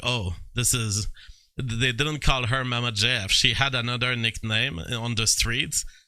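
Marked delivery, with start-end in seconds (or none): 0.0-1.1 acted whispering. Retelling how people at parties talked about her: imitating people whispering. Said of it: "people were whispering".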